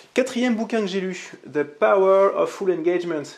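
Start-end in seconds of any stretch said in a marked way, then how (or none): 1.5-3.2 louder, English-accented words. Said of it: "avec l'accent, je mets l'accent".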